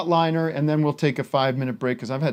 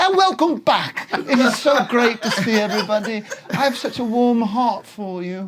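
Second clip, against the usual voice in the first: put-on higher English accent, talk-show host style; 8 semitones higher than usual. Speaker imitates Corden welcoming viewers back on camera, in a fake English accent. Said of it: "he has an English accent. It's fake".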